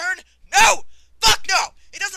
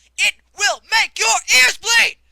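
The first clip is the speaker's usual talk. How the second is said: fed-up, furious, all-out screaming rant; 3 semitones higher, 6 dB louder than usual. The speaker rants to listeners about a game's songs: screaming. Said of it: "I apologize for the screaming".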